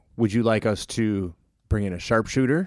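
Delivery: ordinary delivery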